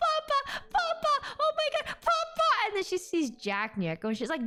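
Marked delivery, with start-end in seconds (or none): 0.0-2.5 put-on screaming. Retelling how someone turned around and started screaming: imitating someone screaming. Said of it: "starts screaming".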